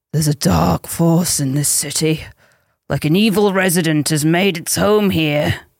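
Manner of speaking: goofy, silly, low horror-game narrator voice. Host reading the first quote for players to judge true or false, silly Resident Evil voice. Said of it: "read by me in a silly Resident Evil voice".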